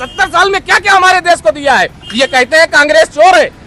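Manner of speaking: heated shouting, high and hard. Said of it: "अरे चिल्लाइए ना जनाब".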